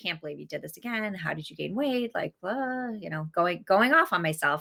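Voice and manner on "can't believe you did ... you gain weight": mock muttering under breath, quieter, faster. Mother retelling scolding herself while getting ready for an event, muttering under breath. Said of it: "I was muttering under my breath".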